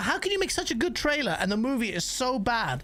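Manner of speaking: plain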